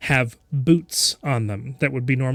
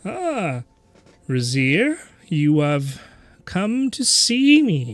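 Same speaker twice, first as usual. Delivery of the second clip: swooping put-on spider voice, hard to hold steady; 4 semitones higher than usual. Voicing a spider magic shopkeeper greeting customers: put-on spider shopkeeper voice. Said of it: "Very, very hard to talk like this".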